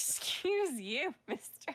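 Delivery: high, slow, haughty put-on rich lady voice.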